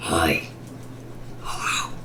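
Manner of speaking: breathy, deep, whispered demon voice. Describing a minigame character's greeting, deep demonic Plushtrap voice. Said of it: "says hi or hello in a deep demonic voice".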